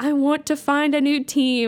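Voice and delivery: put-on exasperated, fed-up, done-with-it shouting. Retelling how a fed-up game player shouts: imitating someone shouting, fed up. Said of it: "He literally shouts because he's so fed up".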